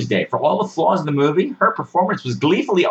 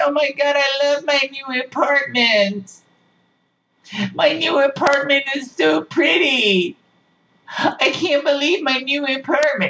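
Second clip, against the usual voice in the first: very slow, high, drawn-out mocking gush; 9 semitones higher than usual. Retelling how the movie's lead talks in her new apartment: mocking imitation of gushing character. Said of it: "Nobody talks like this".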